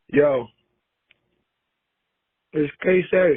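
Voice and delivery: talking while chewing, mouth full of food. A caller's recorded message played on air, eating: talking with mouth full. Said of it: "I'm eating dumplings".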